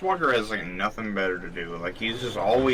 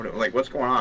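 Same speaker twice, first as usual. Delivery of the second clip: usual speaking voice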